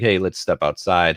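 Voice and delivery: put-on calmness. Describing a man who wants to fight, imitating a calm challenger. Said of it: "he's calm and he's like".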